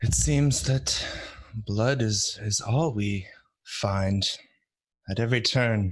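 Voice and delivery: slow, drawn-out, disappointed. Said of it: "Why do you sound disappointed?".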